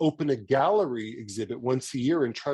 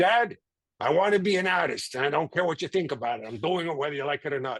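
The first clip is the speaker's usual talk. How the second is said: put-on child sounding like a cigar smoker; 2 semitones higher than usual. Speaker imitates a child telling a parent they will be an artist, in a cigar-smoker voice. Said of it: "they sound like they smoke cigars".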